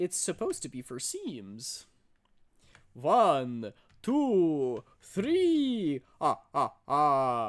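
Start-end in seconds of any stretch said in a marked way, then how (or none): 2.9-7.5 booming, slow voice with swooping pitch. Teased about their laugh, counting to three in a Count Dracula voice. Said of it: "because I sound like Count Dracula?".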